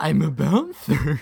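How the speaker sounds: very loud, big, bouncy, belted cartoon voice. Speed round of Winnie the Pooh character impressions, Tigger voice.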